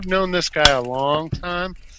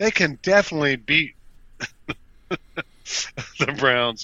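talking while laughing out loud. Saying the Steelers can beat the Browns at home, laughing loudly while talking. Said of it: "I'm sorry I'm laughing so loud".

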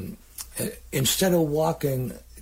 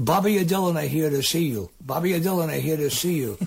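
put-on thick, heavy Italian accent laid on; 2 semitones higher than usual. Retelling how Mike Porco walked up to the stage and spoke, in Mike Porco's heavy Italian accent. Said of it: "He had a very deep Italian accent".

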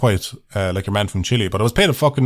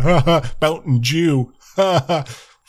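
mocking, very slow, drawn-out teasing jeer; 4 semitones higher than usual. Retelling how commenters mock the speaker's pronunciation: imitating mocking commenters. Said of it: "taking the piss out of me in the comments going".

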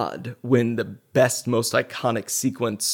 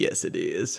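hushed, breathy, soft character voice; 5 semitones lower, 7 dB quieter than usual. Imitating an actor's line from a movie: Forrest Gump voice. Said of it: "his Forrest Gump voice".

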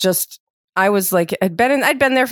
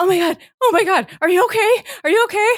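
acted-out alarm through high, rushed, helpless laughter; 12 semitones higher than usual. Retelling what the woman next to her said as both cracked up, imitating freaked-out laughing. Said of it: "laughing so hard and also freaked out".

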